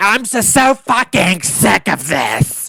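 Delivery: put-on high, slow tearful crying, words drawn out. Recapping a reality-show dinner scene, imitating Meredith crying. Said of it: "so she's crying".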